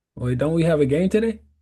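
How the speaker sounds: put-on sarcastic tone. Retelling own words on arriving late at a game: sarcastic question. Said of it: "I'm just being sarcastic".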